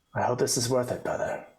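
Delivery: sighing under breath. Character looks to the sky after damage to a tapestry: sighing under breath. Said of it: "I just sigh under my breath".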